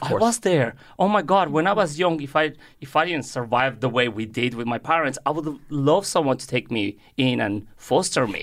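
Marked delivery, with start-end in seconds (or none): none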